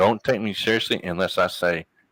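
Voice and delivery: ordinary talk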